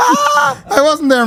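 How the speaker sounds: mock indignant, high-pitched, slow and stretched out.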